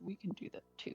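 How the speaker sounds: soft muttered whisper under the breath. A player's character watches another go through a portal: muttering under breath. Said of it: "she'd mutter under her breath".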